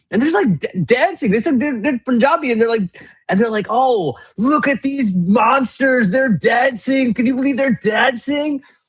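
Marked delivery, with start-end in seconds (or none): 3.7-8.6 put-on alarmist, scaremongering tone, slow. Retelling a video's alarmist commentary on dancing winners: imitating scaremongering tone.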